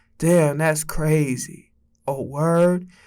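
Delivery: dull, low-energy drawl, very slow. Mocking how amateur YouTubers comment: imitating a low-energy amateur YouTuber. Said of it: "They be like".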